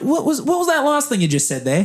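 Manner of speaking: clumsy, very bad New Zealand accent, very high. Retelling a conversation with a man from New Zealand, doing his voice: very bad New Zealand accent. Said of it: "I'm going to do a very bad New Zealand accent".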